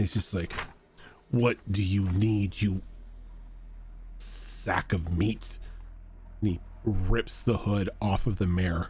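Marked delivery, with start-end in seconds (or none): 1.3-5.6 put-on growly old woman voice, deeper than expected. Narrating a scene, the old woman behind you speaks up, deep growl. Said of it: "growl in a deeper voice than you would expect a little old lady to have".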